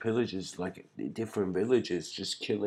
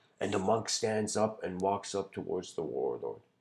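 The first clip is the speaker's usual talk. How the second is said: plain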